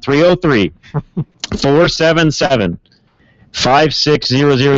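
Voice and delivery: careful, slowed, deliberate, unhurried delivery. Repeating the phone number for the open line: slowing down. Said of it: "I'll slow down".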